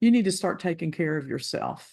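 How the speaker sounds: imitated very cold voice. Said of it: "he said to me in a very cold voice".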